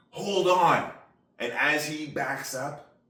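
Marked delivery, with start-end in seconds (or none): 0.2-1.0 sudden, loud, high shout. Retelling what a boat driver called out to everybody: imitating someone screaming. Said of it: "he screams out to everybody".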